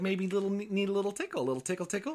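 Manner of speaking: put-on condescending church-lady voice. Retelling what a floating figure said, in a mock patronizing church lady voice. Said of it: "with this very like patronizing church lady voice".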